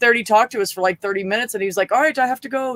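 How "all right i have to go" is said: put-on slight Dutch accent, pitched up. Speaker retells a troll leaving after talking for thirty minutes, imitating Otangelo's little Dutch accent. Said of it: "with his little Dutch accent".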